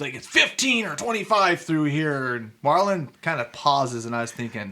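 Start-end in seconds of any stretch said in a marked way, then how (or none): 0.2-2.3 yelling, higher pitch. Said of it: "yell at him".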